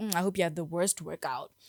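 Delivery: put-on muttering under breath. Retelling what a female coworker said to a gym-goer: imitating muttering under breath. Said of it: "would say under her breath".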